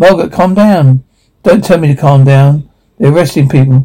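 ordinary delivery

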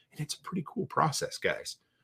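soft, keyed-up, excited whisper. Telling guys about setting goals: whispering. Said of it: "Why am I whispering?".

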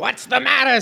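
high, annoying, squawking cartoon parrot voice. Reading fan fiction aloud, voicing an annoying parrot: Gilbert Gottfried parrot squawk. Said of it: "squawked an annoying parrot voiced by Gilbert Gottfried".

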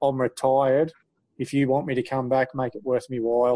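ordinary delivery

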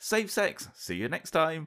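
play-acted bright, bouncy, very high sing-song cheer. Retelling the doctor's goodbye after a checkup, imitating a very cheery voice. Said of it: "He just said in a very cheery voice".

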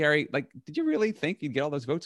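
quick, high, put-on half-teasing, half-serious tone. Retelling what he asked a man over lunch at a diner, retelling a half-joking question. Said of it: "Kind of half jokingly".

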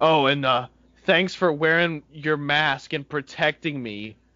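put-on stern tone. Retelling what a customer in a Trump mask said: imitating a stern customer. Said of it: "really stern the whole time he's talking".

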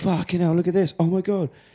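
high, gasped, amazed exclamation.

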